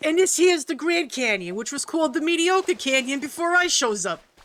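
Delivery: put-on New York accent. Repeating another player's line about the grand canyon: new york accent. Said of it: "imagining that in the New York voice".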